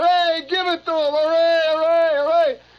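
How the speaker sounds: very high, loud crowd hollering cheer. Retelling people calling from apartment building windows: imitating people hollering.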